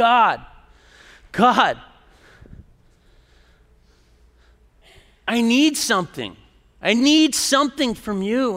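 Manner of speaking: loud screaming, all in one burst. Recounting a desperate past moment, the speaker re-enacts what they screamed: retelling a scream. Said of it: "And then I started screaming".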